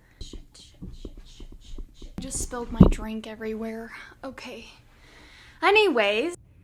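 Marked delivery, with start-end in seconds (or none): 0.2-2.2 rushed, stressed, flustered whisper under the breath. Having just spilled a drink everywhere, stressed cursing. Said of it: "I'm stressed".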